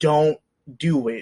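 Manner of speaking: scared, fearful pleading with building dread. Retelling a character begging someone to stop: imitating a fearful plea. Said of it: "you can see that fear in him building".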